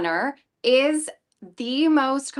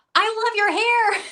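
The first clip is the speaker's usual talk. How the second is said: shrieked out, very high-pitched scream; 10 semitones higher than usual. Retelling a woman in a drugstore praising the wig: imitating a woman screaming. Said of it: "she literally screamed down the aisle".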